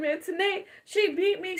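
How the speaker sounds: mock sobbing, high, tearful, upset crying voice. Recounting what she told the woman who asked what happened, retelling her own crying. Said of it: "And I'm crying".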